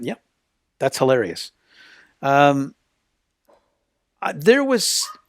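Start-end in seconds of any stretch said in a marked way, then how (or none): 0.0-1.5 put-on deadpan, matter-of-fact, dead straight, no fuss. Retelling what a colleague said about a joke: imitating someone saying it deadpan. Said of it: "she just looked at it and went".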